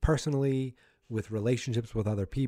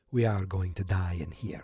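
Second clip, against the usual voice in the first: put-on Russian accent in English; 4 semitones lower than usual. Quoting another person's words in a put-on Russian accent. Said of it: "my Russian accent is perfect".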